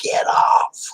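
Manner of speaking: creepy, eerie, spooky screaming, shrieking voice. Retelling what came across the spirit box when sitting on a headstone, creepy screaming voice. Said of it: "this creepy voice screamed across the spirit box".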